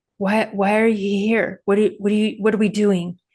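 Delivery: put-on, pleading, begging voice. Retelling what the animal in the stall seemed to ask: imitating someone pleading. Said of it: "just pleading".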